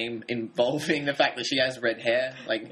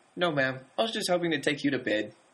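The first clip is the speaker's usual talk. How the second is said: put-on very high voice like a small child; 3 semitones higher than usual. Retelling how the gangster answers her, in a high childlike voice. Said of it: "He's got a very high voice".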